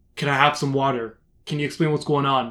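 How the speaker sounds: ordinary talk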